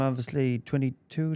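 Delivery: normal talking voice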